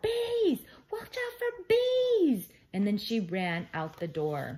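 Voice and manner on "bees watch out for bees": very high, loud shrieking scream. Carrie, the first to react when the jar is rolled out, screaming. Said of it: "Carrie was the first to scream".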